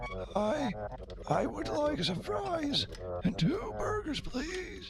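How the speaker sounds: high, very soft whisper.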